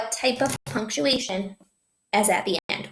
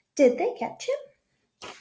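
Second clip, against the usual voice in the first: voice climbs at the end, rising on him; 9 semitones higher than usual. Showing a group how to read a question aloud, rising question intonation. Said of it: "Try saying that with your voice going up".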